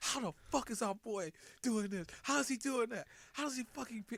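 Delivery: heated, frustrated ranting. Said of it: "I'm gonna let you vent".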